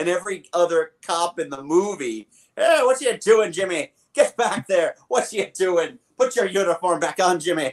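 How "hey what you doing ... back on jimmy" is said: put-on Irish accent. Imitating the cops in a movie scolding someone: stereotypical Irish cop accent. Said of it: "all the Irish racism, that was still all there".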